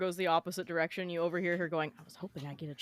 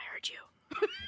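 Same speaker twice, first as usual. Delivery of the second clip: hushed, breathy whisper. In the game, the player's character is already up beside Vic, whispering. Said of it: "I'm whispering".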